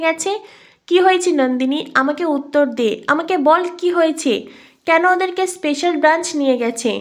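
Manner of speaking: usual speaking voice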